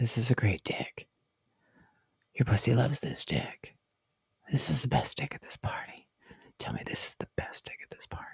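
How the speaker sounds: breathy, hushed, close whisper. Retelling what someone whispers into an ear: imitating a whisper. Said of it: "leans in and whispers".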